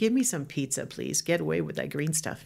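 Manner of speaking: plain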